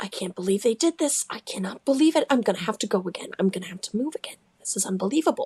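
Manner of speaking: grumbled quietly to oneself. Retelling how a man glared after someone who left: muttering under his breath. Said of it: "muttering under his breath as he goes".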